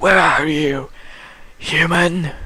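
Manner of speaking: loud, high, screaming monster voice.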